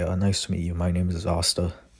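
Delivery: plain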